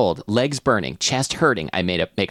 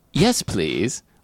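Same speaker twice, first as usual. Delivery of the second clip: put-on accent, unclear if British or Australian. Acting a scene at the intercom, replying in a British or Australian accent. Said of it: "Why did I say that in that accent? I'm not British or Australian".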